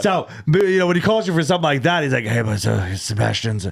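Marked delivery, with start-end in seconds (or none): 2.2-3.7 slow, creaky, exhausted, out-of-breath voice. Retelling a phone call about a show: imitating someone exhausted. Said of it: "he's all exhausted".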